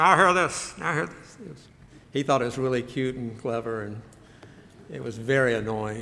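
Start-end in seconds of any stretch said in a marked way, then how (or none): 0.0-1.7 muffled put-on military announcer voice, slower. Imitating a man calling up the steps early in the morning; muffled Navy announcement voice. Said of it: "He'd kind of cover his mouth".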